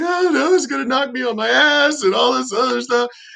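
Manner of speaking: high, tearful, bawling, wailing voice. Retelling a scared recruit on the range: imitating a girl bawling. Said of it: "she's bawling, crying".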